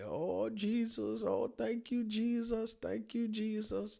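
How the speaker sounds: stretched, very high, drawn-out shouted exclamations. Retelling what the other driver did after getting out: imitating someone shouting. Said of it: "He's kinda shouting like".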